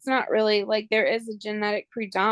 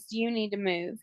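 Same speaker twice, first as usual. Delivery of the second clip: put-on rude attitude, quieter; 6 dB quieter than usual. Retelling a nurse's words to a paralyzed patient: imitating a nurse's bad attitude. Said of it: "had a really bad attitude at me".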